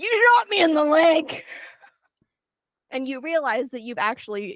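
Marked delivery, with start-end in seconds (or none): 0.0-1.4 high, pained shout, yelling out in pain. Voicing a wounded werewolf who was just shot: shouting in pain. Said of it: "you hear a voice that goes".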